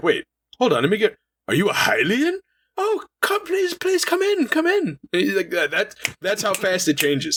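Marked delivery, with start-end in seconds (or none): 0.0-5.0 sudden, eager, very high and swooping. Retelling how a rude man suddenly invites the speaker in, imitating a sudden welcoming switch. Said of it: "all of a sudden he's like".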